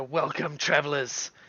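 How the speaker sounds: double-sounding voice. A voice comes through all the travelers' heads, greeting them, in a doubled voice. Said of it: "a nice double noise".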